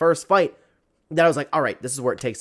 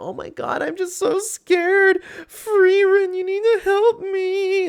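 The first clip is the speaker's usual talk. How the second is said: very high, very slow, drawn-out scared weakling voice; 4 dB louder than usual. Complaining about an anime trope, imitating the weak guy in a mocking voice. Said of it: "a little bit of a mocking voice to do".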